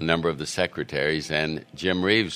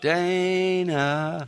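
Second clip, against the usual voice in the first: voice trailing away at the end. Showing how the family calls him: trail off on Dana. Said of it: "it's the way you trail off".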